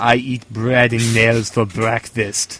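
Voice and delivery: put-on Austrian accent. Speaker imagines what the man in a photo would say, in an Austrian accent. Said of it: "I can imagine like an Austrian accent saying".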